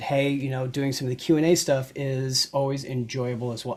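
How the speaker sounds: ordinary talk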